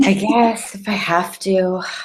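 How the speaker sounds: mock-depressed, sighing reluctance. Mocking someone's reluctance to visit a comic book store, mock-depressed reluctance. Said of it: "you sound so depressed".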